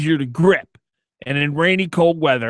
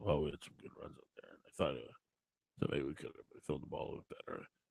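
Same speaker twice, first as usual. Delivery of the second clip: barely audible, hushed, flat monotone mumble; 12 semitones lower, 24 dB quieter than usual. Imitating how he talks in a press conference: Bill Belichick mumble. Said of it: "he literally mumbles".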